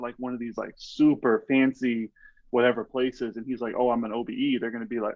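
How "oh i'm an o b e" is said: ordinary talk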